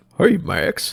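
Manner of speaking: high cartoon voice. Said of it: "Say it like Goofy".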